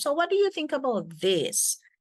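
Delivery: high, loud voice rising high at the end. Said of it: "your voice goes up".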